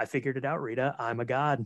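mock flat deadpan delivery. Retelling a scene where he speaks to rita at the diner, mock-deadpan delivery. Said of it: "he just looks at her very deadpan".

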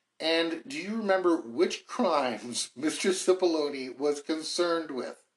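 slow, giggly reading voice. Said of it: "I'm sorry for giggling".

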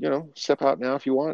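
high, sheepish, meek agreeing tone.

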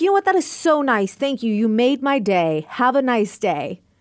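very sarcastic, dripping with sarcasm. Retelling a reply to insulting messages: imitating own sarcastic reply. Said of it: "Very sarcastic".

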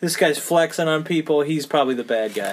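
usual speaking voice

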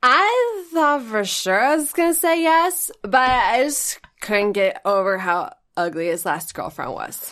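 put-on sloppy, slurred drunk speech, words running together. Asked for their best drunk, the speaker performs it: acting drunk, slurred words. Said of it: "give me your best drunk".

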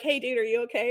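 mock, overly sweet caring tone. Imitating a player checking on a fallen player: imitating a super nice concern. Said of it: "being super nice and being like".

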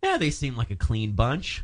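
normal talking voice

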